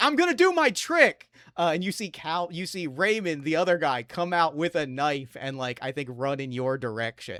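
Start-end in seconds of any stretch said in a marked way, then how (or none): 0.0-1.3 loud, very high shriek, sounding from above. Voicing a character screaming down from the circus platform: screaming down from above. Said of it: "Calvin is screaming down".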